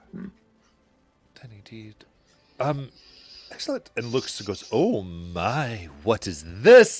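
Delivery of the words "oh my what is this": really excited, louder, slower. A game master voices a character looking at what the players brought: really excited. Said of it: "And gets really excited".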